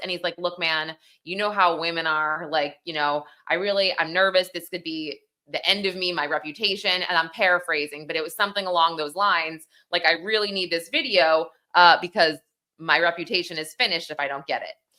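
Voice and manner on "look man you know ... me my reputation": plain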